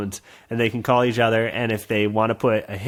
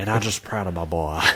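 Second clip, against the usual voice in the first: put-on southern gentleman voice, side of mouth, much lower; 5 semitones lower, 4 dB quieter than usual. Imagining a recorded message from a friend's dad, the speaker does a southern gentleman impression. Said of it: "Who speaks out of the side of his mouth".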